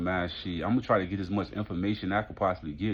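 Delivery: ordinary talk, nothing marked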